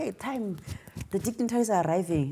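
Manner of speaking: high-pitched shout. Recalling a woman at an event announcing arrivals, retelling her shouting. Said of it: "she's shouting like".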